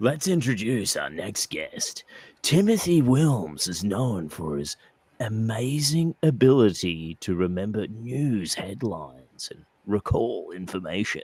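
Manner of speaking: radio DJ voiceover style, FM countdown announcer voice. Host introducing the next guest, in an fm radio countdown voice. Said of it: "Like you were at a F M radio station doing their Hot one hundred countdown".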